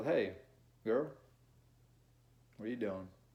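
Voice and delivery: smooth, relaxed, calm, low-pitched seductive voice. Showing how a seductive dude talks: calm, lower seductive voice. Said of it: "A dude who is seductive, ... you're more calm. ... your tone pitch is not as high".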